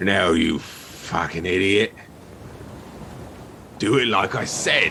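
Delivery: gruff voice.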